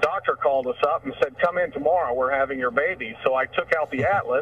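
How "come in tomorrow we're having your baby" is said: usual speaking voice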